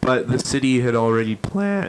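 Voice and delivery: cracking voice. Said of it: "my voice is cracking so much".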